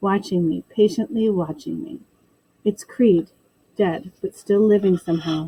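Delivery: plain reading voice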